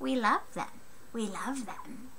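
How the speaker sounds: poorly done creature voice. Speaker repeats their own phrase in a terrible Gollum impersonation. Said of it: "That was a terrible impersonation".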